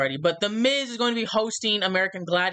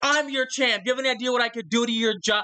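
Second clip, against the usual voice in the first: put-on yelling voice, higher; 4 semitones higher than usual. Retelling how a wrestler came in yelling: imitating a wrestler yelling. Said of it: "he comes in there yelling".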